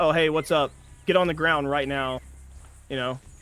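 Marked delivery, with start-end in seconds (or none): 0.0-2.2 put-on casual bandit talk. Joking about acting like the outlaws: casual outlaw talk. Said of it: "start walking around talking like this".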